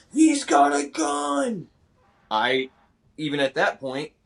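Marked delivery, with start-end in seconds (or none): 0.2-1.7 acted-out very high, very slow, creaky, drawn-out cry. Retelling how a protester yelled on seeing the gun: imitating a protester yelling. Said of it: "she yells out".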